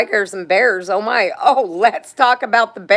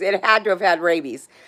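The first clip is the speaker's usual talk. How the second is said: usual speaking voice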